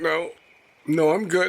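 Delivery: tearful, near crying. Insisting to a companion near a strong smell that you're fine: teary-eyed. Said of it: "Are you crying?".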